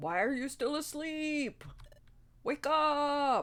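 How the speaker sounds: loud, shouting creature voice. Voicing Loudred waking a fellow apprentice, a held-back shout. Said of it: "Trying not to actually scream into the microphone".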